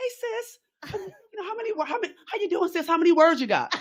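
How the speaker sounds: tiny, very high-pitched little voice. Quoting Goldie while writing an article at a coffee shop, Goldie's little voice. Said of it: "with her little voice".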